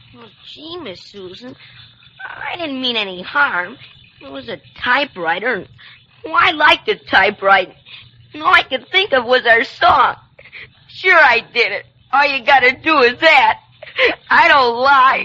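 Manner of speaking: tearful voice, crying through every word. [name] answering Miss Susan about the printed story, crying while talking. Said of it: "don't cry".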